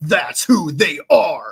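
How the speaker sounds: put-on slow, forceful, emphatic, weighty delivery. Retelling how a man answered a question, the speaker imitates a forceful delivery. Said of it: "He says it with so much force".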